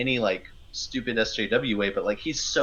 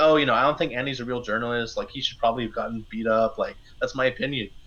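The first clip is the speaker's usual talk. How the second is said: normal talking voice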